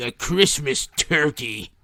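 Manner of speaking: put-on low, grumpy, cranky old-man voice. Reading a Globe and Mail critic's review aloud as he imagines him, put-on grumpy old man voice. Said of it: "he basically just looks like a grumpy old man".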